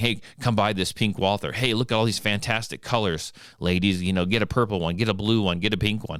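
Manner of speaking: ordinary talk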